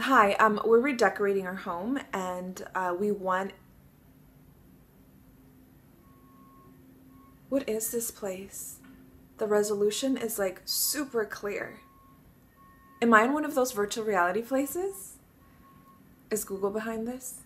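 very chill laid-back easygoing relaxed delivery. Reading a commercial audition as the customer: very chill. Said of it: "very chill".

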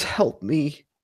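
hushed, pleading, whispered murmur. Voicing a girl who turns to Monty: whispering a plea for help. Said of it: "and she whispers".

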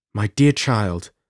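ordinary delivery

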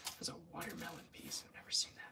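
very soft ASMR whisper.

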